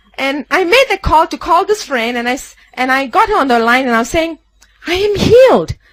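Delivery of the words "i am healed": high, screamed cry at the top of the voice. Retelling a phone call to a friend from a corridor, retelling own screaming. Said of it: "I'm screaming at the top of my voice".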